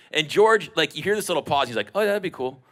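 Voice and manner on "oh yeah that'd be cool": put-on, pitched-up, casual, playing-it-cool nonchalant tone. Retelling how someone answered a dinner invitation: imitating someone playing it cool. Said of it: "He plays it so cool".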